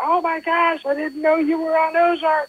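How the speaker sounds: very high-pitched, thrilled, excited shriek. Retelling how a woman ran up and jumped on him, imitating her excited screaming. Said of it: "And was screaming".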